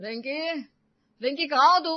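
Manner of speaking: loud shouting, pitched high. One character calling out for another in the house, shouting. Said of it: "क्यों चिल्ला रहे हो इतना?".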